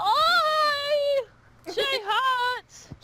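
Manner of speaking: very high, gasping cry of pain. A narrator voices a wounded man backing away after being slashed, gasping in pain. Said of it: "he gasps out in pain".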